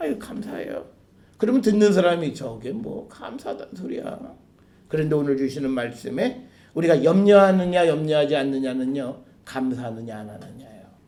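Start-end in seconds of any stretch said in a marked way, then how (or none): 0.0-0.9 annoyed, begrudging, irritated, breathy, half-whispered mutter. Showing how someone thanks a person reluctantly, with irritated, grudging thanks. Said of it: "짜증 섞인 말로".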